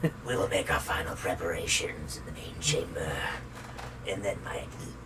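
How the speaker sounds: hard, low, soft, voiceless villain whisper.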